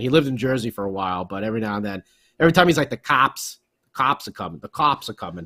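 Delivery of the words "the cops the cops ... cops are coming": put-on Boston accent. Imitating a friend from Boston whose accent slips out, Boston accent. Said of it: "he gets the accent coming out".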